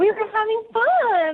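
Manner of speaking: voice pushed very high in pitch. Repeating how a woman described her night after meeting a man at a bar, really high voice. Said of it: "you said it with a really high voice".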